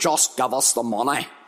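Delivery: put-on Northern Irish accent, best attempt. Recalling a man on television raising famine money: attempted Northern Irish accent. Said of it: "That's the best I can do for the Northern Ireland accent".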